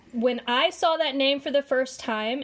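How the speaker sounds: ordinary delivery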